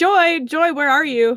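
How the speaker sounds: calling out, projected across a distance. Using mimicry to copy Lydia's voice calling for Joy, mimicking Lydia calling out. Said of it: "mimic the voice of Lydia calling her".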